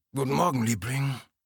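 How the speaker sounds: exaggerated sleepy voice. Picking up an early-morning phone call in his hotel room: exaggeratedly sleepy murmur. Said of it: "murmelte mit übertrieben schläfriger Stimme".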